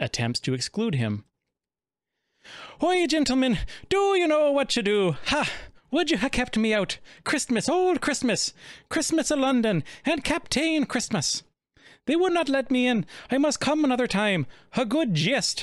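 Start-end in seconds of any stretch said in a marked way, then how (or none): 2.8-15.6 put-on Irish accent, higher-pitched. Reading an old Christmas play aloud in a put-on Irish accent. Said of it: "I'm gonna do the Lucky Charms accent here".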